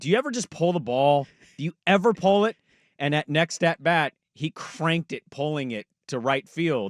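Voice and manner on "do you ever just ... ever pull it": play-acted, fed-up, angry, pitched-up voice. Retelling a manager's complaint to a hitter: imitating Lou Piniella being pissed. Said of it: "Lou Piniella being pissed and saying".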